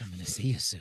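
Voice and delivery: very low, hushed, menacing villain voice. Repeating another speaker's line back to him, echoing a threatening line. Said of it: "The way you said that was very threatening".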